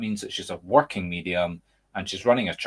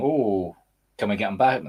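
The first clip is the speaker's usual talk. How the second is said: mocking sarcastic imitation. Retelling what churchgoers say about a visiting medium: sarcastic imitation. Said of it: "I'm being sarcastic".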